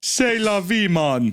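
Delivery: French accent sounding Jamaican. Attempting a french accent that a listener says sounds jamaican. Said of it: "like you're trying to do a Jamaican accent".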